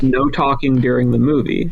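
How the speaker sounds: usual speaking voice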